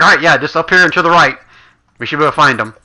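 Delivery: anxious, on-edge, quick nervous delivery. Voicing a character hiding under an ogre, looking around: nervous. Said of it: "as he looks around nervously".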